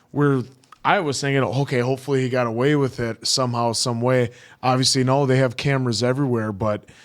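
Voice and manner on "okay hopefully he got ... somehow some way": plain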